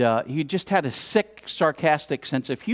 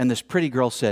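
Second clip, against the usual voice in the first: ordinary talk, nothing marked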